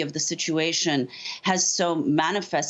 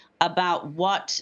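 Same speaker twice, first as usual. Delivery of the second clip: plain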